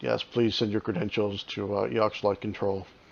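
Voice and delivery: soft, gruff, straightforward flat monotone. Voicing a planet's control as the listeners approach, in a gruff, straightforward monotone. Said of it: "gruff, um, straightforward, monotone voice".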